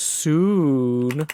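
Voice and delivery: mocking, ironic, drawn-out soon. Interpreting a capitalized word in a poem: sarcastic soon. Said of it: "I don't know, sarcastic, like".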